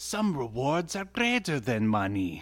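put-on Russian-accented speech. Retelling what Linka says, in Linka's Russian accent. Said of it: "Is that your Russian accent?".

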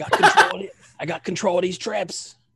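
put-on Australian accent. Voicing a character who has taken control of the traps: Australian accent.

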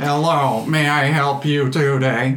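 slow, clockwork brass automaton voice. Game master voices an automaton greeting the party: automaton character voice. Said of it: "but by a metallic automaton that stands about 6 feet tall and made from brass and bronze. Gears and cogs stick out of it from everywhere. It is vaguely humanoid in shape, but it doesn't have a face. I".

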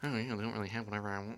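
very hushed, muttered under the breath. Retelling what a man beside her in a CD section said, mumbling. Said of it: "kind of like mumbling".

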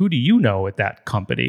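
mock-teasing, playful, joking tone. Retelling what he asked a teenager raving about ice cream, retelling a joking question. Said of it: "like jokingly".

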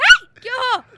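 very loud, high, shrill scream. Retelling how mom reacted to a man with a snake, retelling mom's scream. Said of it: "e gritou".

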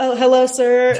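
very high customer-service voice. Retelling reactions in a haunted house: customer service voice. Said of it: "a customer service person where I'm just like".

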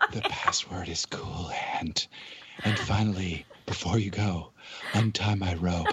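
slow, soft, sensual whisper.

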